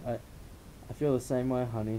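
plain

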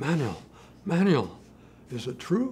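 put-on breathless speech. Speaker retells the jogging dean's question to him, imitating breathless speech. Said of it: "He says, breathlessly".

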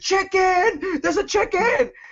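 mock long, very slow, drawn-out screaming. Retelling searching a tree for an idol when a chicken appeared, retelling own screaming. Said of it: "And I start screaming".

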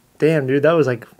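ordinary talk, nothing marked

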